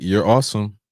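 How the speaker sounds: ordinary talk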